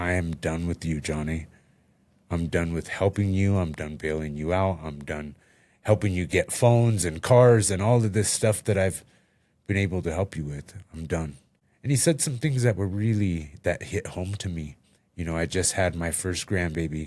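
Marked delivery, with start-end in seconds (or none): none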